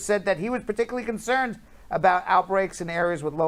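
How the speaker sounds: ordinary talk, nothing marked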